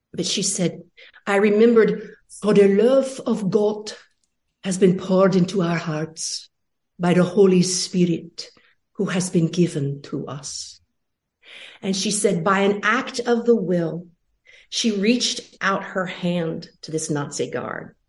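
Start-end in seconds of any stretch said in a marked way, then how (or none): 1.3-10.8 put-on Dutch accent. A speaker quotes a woman recalling a Bible verse, in a put-on Dutch accent. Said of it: "I'll do it in the beautiful Dutch accent".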